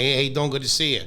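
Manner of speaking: Midwestern accent. Showing how their hybrid accent sometimes sounds, in a midwestern accent. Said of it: "Sometimes I sound like".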